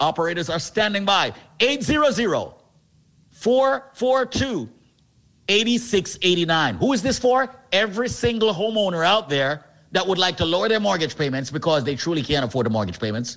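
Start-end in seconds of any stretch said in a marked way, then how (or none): 1.6-6.8 slow and deliberate, each digit spaced out. Giving listeners the phone number to call, saying it slowly. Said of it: "Let me say the number slowly".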